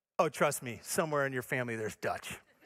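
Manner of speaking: mock straight-faced, matter-of-fact, low deadpan voice. Retelling someone's reply about having Dutch family: imitating a deadpan reply. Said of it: "he looks at me straight face and he says".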